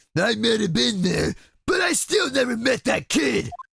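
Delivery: put-on Brooklyn accent. Voicing a witness testifying in court: Brooklyn accent. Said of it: "the fucking Brooklyn accent".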